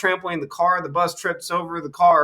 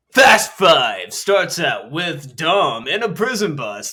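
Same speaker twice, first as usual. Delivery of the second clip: slow, dragged-out, put-on, fake-furious anger; 3 dB louder than usual. Summarizing the start of Fast Five to the others, mock-furious delivery. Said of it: "if you're angry at me, is that what you're gonna sound like?".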